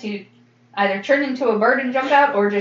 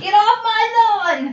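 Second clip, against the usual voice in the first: put-on very high, very slow, drawn-out cranky old man yell; 13 semitones higher, 4 dB louder than usual. Voicing the old man who holds up his cane: old man yelling. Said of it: "holding up his cane like he's yelling".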